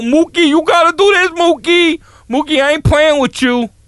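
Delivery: put-on laid-on New York accent, high-pitched. Imitating people where they lived: New York City accent. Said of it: "the New York City accent".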